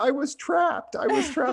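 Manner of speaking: put-on little girl voice, very high, frantic, freaking out.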